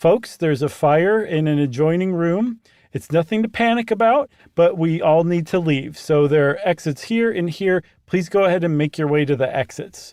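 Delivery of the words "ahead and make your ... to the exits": ordinary talk, nothing marked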